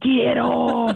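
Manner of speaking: mock yelling, rasped out like an evil beast. Retelling yelling at a child climbing on her back: imitating yelling like an evil beast. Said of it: "yelling at her".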